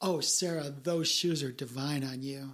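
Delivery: sarcastic, fake-sounding praising tone. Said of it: "I can literally say".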